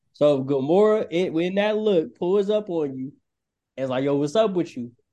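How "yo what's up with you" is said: put-on New York accent, put on. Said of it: "Like, with the New York accent".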